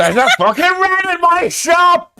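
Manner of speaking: frightened screaming. Voicing a shopkeeper who spots a rat in his shop: screaming shopkeeper. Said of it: "he screams and goes".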